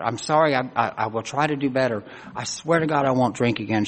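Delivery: ordinary delivery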